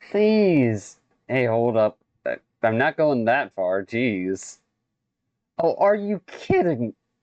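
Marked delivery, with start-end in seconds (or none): 5.6-7.0 high voice cracking and breaking mid-phrase. Reacting on the spot as something happens, voice cracking. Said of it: "Fucking voice cracked right there".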